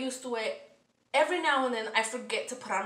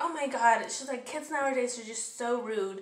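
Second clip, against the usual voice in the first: normal talking voice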